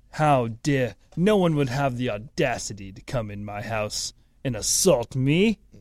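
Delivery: put-on pompous, rich man voice. Imagining what Paul says to the intruder: imitating a pompous Paul Pelosi. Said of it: "he's so rich, pompous, powerful fuck".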